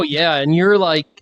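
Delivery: plain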